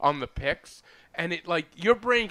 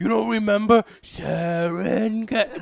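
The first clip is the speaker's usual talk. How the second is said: ugly, awful, loud yelling voice; 4 semitones higher, 7 dB louder than usual. Retelling a man calling out of the blue, imitating his awful voice. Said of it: "With his awful voice".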